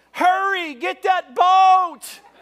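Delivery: shrill, booming, very loud, high, drawn-out shout. Retelling someone calling out to hurry for the boat: imitating someone yelling out. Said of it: "I hear somebody yell out".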